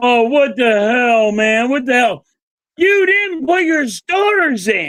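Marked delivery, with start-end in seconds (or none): 0.0-2.3 put-on disappointed voice. Watching a game and imitating Nick Sirianni's disappointment face: imitating Nick Sirianni's disappointment. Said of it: "this disappointment face, like".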